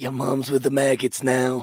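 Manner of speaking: strange, weird, possessed demon voice. Describing demons taking over bodies, the speaker quotes them: weird demon voice. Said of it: "that weird voice?".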